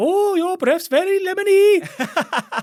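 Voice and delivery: shrill, very loud, high-pitched put-on Welsh accent. Retelling what a woman said to a man who kissed her, in a welsh accent. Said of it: "in a Welsh accent".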